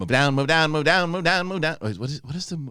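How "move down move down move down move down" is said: put-on old-fashioned forties man voice. Imitating the cartoon rabbit moving everyone along: imitating the rabbit. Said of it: "he kinda talks like this".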